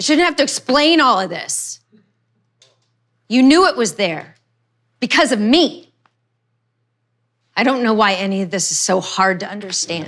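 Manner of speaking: mad, arguing, angrily insistent tone. Arguing with someone about a text they sent, angry. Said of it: "why you're so damn angry at this".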